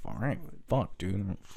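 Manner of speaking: under the breath. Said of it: "I'm like".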